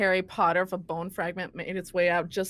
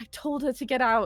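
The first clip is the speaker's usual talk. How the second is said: high, play-acted, frantic, panicking blurt; 5 semitones higher than usual. Player in a tabletop game, speaking as their character: panicking. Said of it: "but I'm just panicking".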